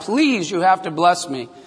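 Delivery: mock pleading and crying. Retelling a Bible story, voicing Esau begging his father: imitating pleading and crying. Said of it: "begged and pleaded and cried".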